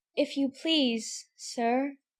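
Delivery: shy, meek, soft, timid. The girl, desperate for help, addresses the rabbit in a low timid voice. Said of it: "she began in a low timid voice".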